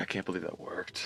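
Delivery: quietly muttered under the breath. Playing a character who quietly follows the group: muttered under breath. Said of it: "under my breath".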